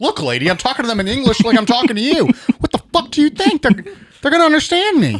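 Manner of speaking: very high, rising, indignant and offended tone. Acting out a character answering a woman's questions: imitating an offended man. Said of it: "he's getting, like, offended that she's asking".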